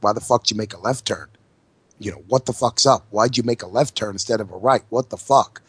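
acted-out nagging, accusing, demanding rant. Acting out a wife scolding a left turn: imitating a nagging wife. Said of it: "a bitch that nags. A fucking nag".

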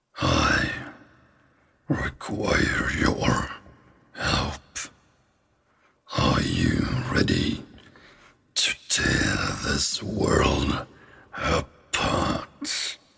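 hushed, breathy whispered voice. Voicing a sword heard in a character's head after it is caught: voice of a talking sword. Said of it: "you hear a voice in your head".

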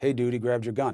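mock-casual delivery. Describing what an officer will be heard saying, imitating an officer's casual tone. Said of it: "In that kind of tone".

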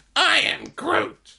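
dopey, dim, dumb-sounding voice. Showing how a small character talked, in a stupid Groot voice. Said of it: "make up for it with stupid voice".

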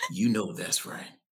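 mock sultry voice that sounds dirty. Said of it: "in Dulé voice".

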